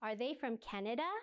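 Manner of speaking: slight pitch rise at the end, on Canada. Teaching question intonation with example questions, slight rise at the end. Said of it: "At the end. Goes slightly up".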